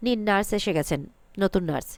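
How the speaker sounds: usual speaking voice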